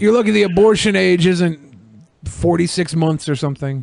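ordinary talk, nothing marked

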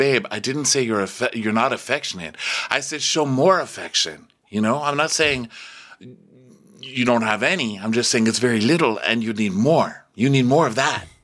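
condescending, patronizing, talking-down tone. Retelling Sarah's reply while patting a knee: imitating Sarah condescendingly.

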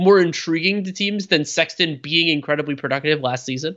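ordinary delivery

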